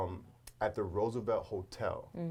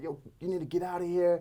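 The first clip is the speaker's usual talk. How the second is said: acted, loud, raised bouncer yell; 8 semitones higher, 5 dB louder than usual. Retelling an altercation with drunk people: imitating security guards yelling. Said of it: "they would be yelling".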